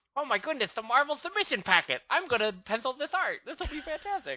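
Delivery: put-on cute, high-pitched, lisping nine-year-old kid voice. On a podcast, play an invented nine-year-old getting a Marvel submission packet, nine-year-old Scott Kurtz voice with cute lisp. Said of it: "He sort of got the cute little lisp".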